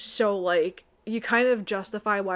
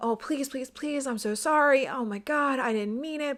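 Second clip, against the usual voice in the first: put-on remorseful, rushed, high-pitched begging; 6 semitones higher than usual. Recapping a story, the speaker acts out Oscar begging her, imitating Oscar pleading. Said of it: "Oscar starts like pleading".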